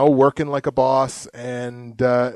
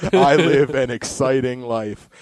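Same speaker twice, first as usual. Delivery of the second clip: slow, mock-earnest conviction. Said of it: "you can hear the conviction in his voice".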